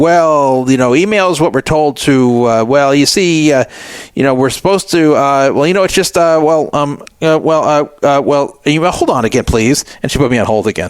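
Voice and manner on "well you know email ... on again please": put-on stammering, stuttering speech. Retelling a phone agent's reply: imitating someone stammering. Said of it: "she started stammering and stuttering".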